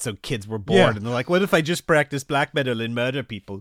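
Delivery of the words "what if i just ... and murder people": put-on clumsy, unconvincing Norwegian accent. Joking about bored Norwegian kids in the 90s, quoting them in a bad Norwegian accent. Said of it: "That wasn't a very good Norwegian uh, impression".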